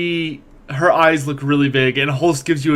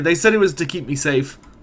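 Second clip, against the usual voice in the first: normal talking voice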